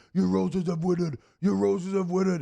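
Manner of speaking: put-on thick Cajun accent, loud high hollering. Among tennessee fans, the speaker imitates grandpa yelling in a very cajun accent. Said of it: "my grandpa in his very Cajun accent".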